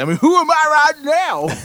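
put-on shrill old prospector voice. Host on air shows off one of his weird voices, in an old prospector voice. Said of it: "It sounds like the old prospectors".

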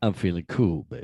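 fake, put-on deep low-register voice. A podcast host opens the episode greeting his co-host: put-on deep voice. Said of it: "It's a deep voice".

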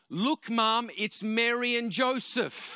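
put-on very high, shrill child's voice, yelled out. Telling how a child spotted two women in the street, imitating Amalia shouting. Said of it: "shouts out".

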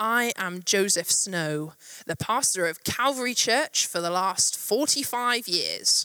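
acted, big, grand booming preacher voice. Telling a joke, the speaker acts out the minister standing up to introduce himself, booming. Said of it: "He stands up and booms out".

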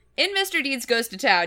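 plain

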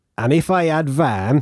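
northern English accent. Asked to recreate a northern accent, trying out a sentence in a northern English accent. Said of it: "it only really works if you do it in a northern accent".

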